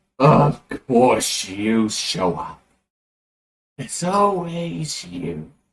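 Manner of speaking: maniacal, very slow, laughing villain voice. Voicing the Grand Lich as he laughs at a hero: maniacal laughing villain voice. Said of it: "starts laughing maniacally and it's like".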